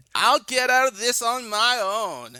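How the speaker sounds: very high, slow voice. Retelling what Sable says to Mark: imitating Sable's voice. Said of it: "That's pretty good".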